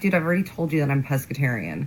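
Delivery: ordinary talk, nothing marked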